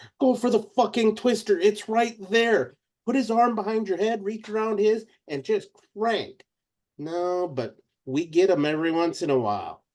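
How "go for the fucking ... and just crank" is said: play-acted shouting, pitched up. Retelling what gets yelled at the TV: imitating screaming at the TV. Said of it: "I'm screaming at the T V a lot".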